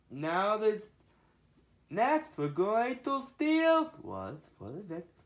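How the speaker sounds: high cartoon voice, pitch swinging and swooping. Showing off cartoon voices, starting with a Gru voice. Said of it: "I'll make a Gru voice".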